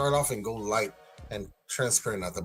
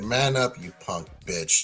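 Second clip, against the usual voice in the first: smooth put-on voice; 2 semitones lower, 3 dB louder than usual. Retelling what a friend would say while taking a puff: imitating Tony's smooth tone. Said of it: "you know what kind of tone I'm talking about".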